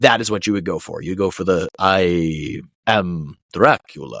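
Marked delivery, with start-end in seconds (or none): 1.8-4.2 "I" stretched out, deep and slow. Showing the vampire voice everybody does: Bela Lugosi Dracula voice. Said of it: "go for that long, deep, drawn out, Transylvanian sounding voice".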